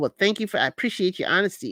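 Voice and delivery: put-on sarcastic tone. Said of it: "it sounded sarcastic".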